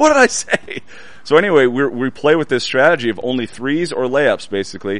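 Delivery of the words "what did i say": mock very high, reproaching yell. Retelling someone yelling after a missed mid-range shot: retelling someone yelling. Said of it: "he's like yelling at me".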